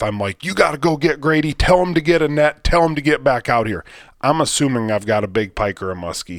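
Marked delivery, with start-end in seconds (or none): 0.4-3.8 play-acted loud, urgent yelling. Retelling yelling at their wife after setting the hook, retelling own yell. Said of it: "So I'm yelling at my wife".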